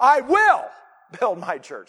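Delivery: stress placed on the word will.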